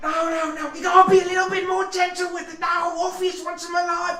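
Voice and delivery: shouting. Voicing an unseen figure the players hear ordering others around: shouting. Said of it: "you start to hear shouting".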